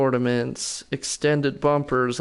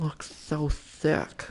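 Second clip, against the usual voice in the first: put-on lisping voice, s sounds blurred; 2 semitones higher, 7 dB quieter than usual. Commenting on something in a put-on lispy voice. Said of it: "It's like a lispy Jimmy voice".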